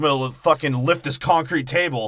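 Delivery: loud, belted-out, boastful wrestler-style voice. Retelling a movie scene as The Rock: The Rock impression. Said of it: "The Rock's like".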